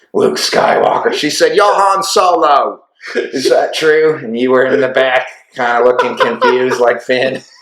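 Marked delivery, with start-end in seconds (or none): 1.6-4.2 bad British accent, one word drawn out. Recalling what a woman said to him at first meeting, in a bad Rey British accent. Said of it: "Is that a bad Ray British accent?".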